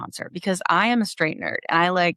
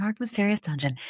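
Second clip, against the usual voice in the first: put-on spooky hostess voice, quieter; 5 dB quieter than usual. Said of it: "I sound very like Elvira there".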